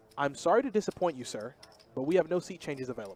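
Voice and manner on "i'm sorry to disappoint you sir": put-on, polite customer-service voice. Refusing a seat-change request, the speaker uses a customer-service voice. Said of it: "I'm gonna give him the best customer service voice I got".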